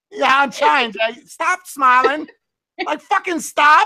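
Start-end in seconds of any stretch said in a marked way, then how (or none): 1.3-3.9 high, drawn-out put-on exasperated, furious yell. Retelling yelling at a woman who kept smiling, retelling an angry yell. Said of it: "mad at her and yelling before".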